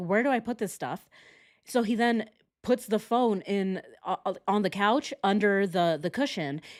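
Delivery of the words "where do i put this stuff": ordinary talk, nothing marked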